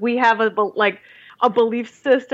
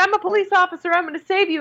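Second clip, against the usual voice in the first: mock overeager, no-chill, pitched-up police officer voice; 8 semitones higher than usual. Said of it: "no chill whatsoever".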